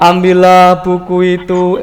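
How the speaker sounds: flat reading with no intonation.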